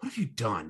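calm, collected, soft, composed delivery. Imitating Homelander's calm line after shooting Butcher: calm, collected Homelander impression. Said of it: "it's all calm and collected".

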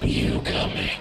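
hollow, metallic, hissing whisper. Narrating a story, an inhuman voice calls to the narrator: hissing whisper. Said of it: "It whispered with a hiss".

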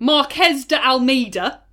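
heavy English accent. Trying to say a spanish name: really english accent. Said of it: "I'm going to say it in a really English way".

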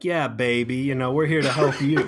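hip, groovy, swinging, charming British voice. Retelling how a man came aboard offering help, in an Austin Powers voice. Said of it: "talking with almost like this Austin Powers".

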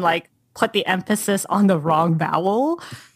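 ordinary talk, nothing marked

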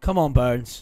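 loud, encouraging, cheering shout. The speaker cheers on burns, shouting. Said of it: "Don't know why I'm shouting for Burns".

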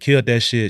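ordinary delivery

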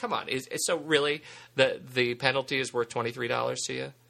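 ordinary talk

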